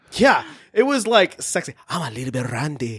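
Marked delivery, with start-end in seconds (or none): 1.9-3.0 put-on thick, heavy Spanish accent, very low and soft.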